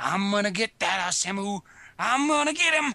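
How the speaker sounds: put-on whining, unhinged, crazy old-man voice. Acting out a character's whiny threat: imitating a whiny crazy old man. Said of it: "he's like the crazy old man sitting in the corner".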